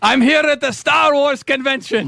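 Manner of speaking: high puppet dog voice. Mocking a long-running character's catchphrases, speaker does a Triumph voice. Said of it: "Everybody can do a Triumph voice".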